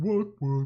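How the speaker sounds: high, loud voice. Saying the villager voice line loved saying: Warcraft III villager voice line. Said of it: "villager, uh, voice line is like a stem".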